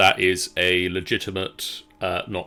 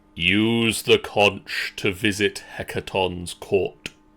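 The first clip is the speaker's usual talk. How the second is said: thunderous giant voice. Voicing a giant addressing the group, in a booming giant voice. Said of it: "In a booming voice in giant".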